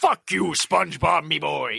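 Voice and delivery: rough, high-pitched yell. Describing a video game, the speaker acts out a character yelling at the player: imitating Mr. Krabs yelling. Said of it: "So Mister Krabs just yelling at you like".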